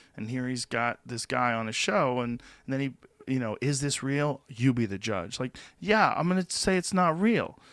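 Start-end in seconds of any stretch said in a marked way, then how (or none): none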